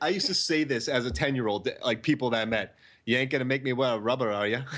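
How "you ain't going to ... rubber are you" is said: put-on, movie-style Irish accent. Speaker recalls a line said to people as a 10-year-old, Irish accent from Patriot Games. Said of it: "my Irish accent was from Patriot Games".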